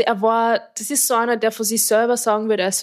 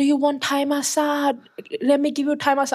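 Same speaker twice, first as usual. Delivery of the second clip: put-on Thai-accented English, pitched up; 5 semitones higher than usual. Retelling how someone mimicked people offering thai massage: imitated thai accent. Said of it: "dann so nachzumachen, den Akzent".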